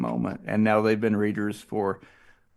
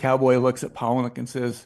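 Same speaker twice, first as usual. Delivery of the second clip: ordinary talk, nothing marked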